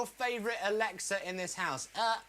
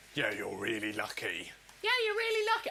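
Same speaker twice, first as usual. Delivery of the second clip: very low, deep, swooping, odd funny voice; 12 semitones lower than usual. Show host introducing a segment with Dave: weird put-on voice. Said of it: "that's got a weird voice".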